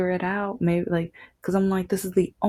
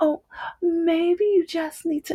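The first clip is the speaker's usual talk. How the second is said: put-on slow-talking woman's voice, much higher pitch; 10 semitones higher than usual. Retelling a woman who offered help with a door, imitating her talking slow. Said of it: "she starts talking slow".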